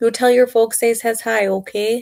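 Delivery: exaggerated upper midwest accent, Minnesota-Wisconsin style. Speaker shows off an accent to listeners: Upper Midwest accent. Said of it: "That was my best uh, Wisconsin, ... Minnesota accent".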